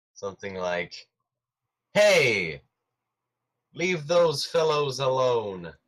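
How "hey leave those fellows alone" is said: very loud shouting, louder. Yelling to get the goblins' attention in character: yelling very loudly. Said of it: "I might yell very loudly".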